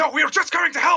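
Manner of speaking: desperate sobbing. Voicing a distant figure being wrestled to the ground: crying desperate plea. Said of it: "as this crying".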